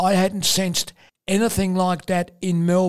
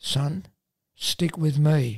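hushed, quiet stage whisper; 3 semitones lower, 3 dB quieter than usual. Retelling a half-whisper heard on walking in the door: imitating a quiet half-whisper. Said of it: "John quietly whispers to me".

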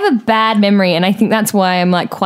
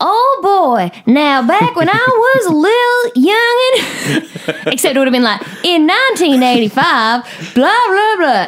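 put-on Southern accent, much higher and slower; 9 semitones higher than usual. Recalling dressing up as Colonel Sanders for school, doing the Colonel Sanders accent. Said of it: "Did you do the accent?".

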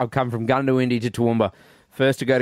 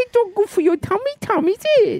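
put-on voice, higher pitch. Teasing another speaker about eating late: put-on voice. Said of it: "We don't do those voices on this show".

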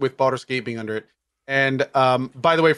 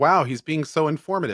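plain

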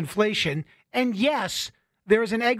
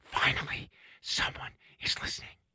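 breathy, airy, whispered delivery; 7 semitones lower, 10 dB quieter than usual. Quoting the guest's reaction to news: Jeremy Harris impression. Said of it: "what a great Jeremy impression you do".

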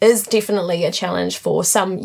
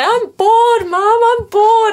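put-on very high, drawn-out, weepy child's crying whine; 6 dB louder than usual. Retelling complaining to mum as a bored child: imitating own childhood crying. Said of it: "and start crying".

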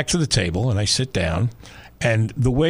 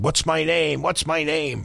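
put-on, slow, drawn-out, creaky, rough shouting; 4 semitones higher than usual. Retelling a boxer yelling at his beaten opponent: imitating Ali yelling. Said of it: "Ali would yell at him".

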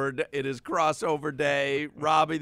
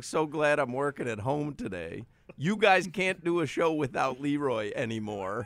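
ordinary talk, nothing marked

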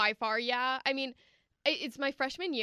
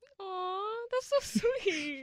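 teary, on the verge of tears, pitched up; 9 semitones higher than usual. On the radio, a guest hears praise relayed by the host, teary voice. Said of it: "no crying on the radio".

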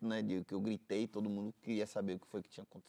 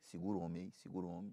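quiet, soft, hushed murmur; 3 semitones lower, 8 dB quieter than usual. Retelling how a doctor spoke to a relative: imitating someone speaking softly. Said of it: "baixinho pra ele".

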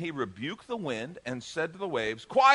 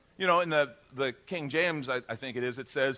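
ordinary delivery

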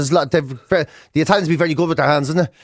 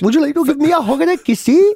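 put-on Welsh valleys accent, pitched very high; 11 semitones higher, 3 dB louder than usual. Showing others what Welsh people sound like, do a Welsh accent impression. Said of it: "when you're doing a Welsh".

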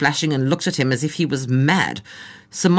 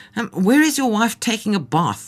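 suspicious, distrustful, probing, pitched-up voice; 7 semitones higher than usual. On a game drive, the guide questions a German tourist, suspicious. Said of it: "Asked the guide suspiciously".

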